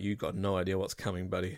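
put-on mocking under-breath laughter. Retelling what friends who had kids said: imitating a taunting giggle under breath. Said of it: "this kind of taunting giggle under their breath".

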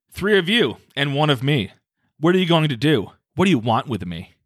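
full, sassy attitude. Reading out a woman's account of facing three beings, full sass. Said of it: "She went full sass".

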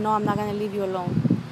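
ordinary talk

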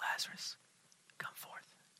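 barely voiced, very quiet, hushed whisper. A speaker imagining how Jesus could have called Lazarus out: whispered. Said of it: "Jesus could have whispered".

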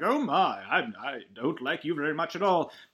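slow robot-butler voice, the word "I" drawn out. Summarizing a story, the speaker quotes the Curator: Curator robot-butler voice. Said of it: "He's like a robot butler figure".

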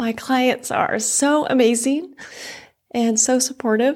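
on the verge of tears. Speaker in the fitness industry talking about their clients, tearing up. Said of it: "I'm going to tear up".

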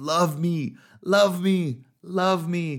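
acted straining effort. Retelling a movie scene of using powers on someone: imitating straining effort. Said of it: "straining, trying to use these God powers".

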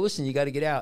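normal talking voice

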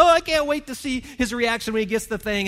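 high, loud, giddy excitement.

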